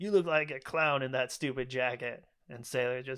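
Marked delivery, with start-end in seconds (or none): none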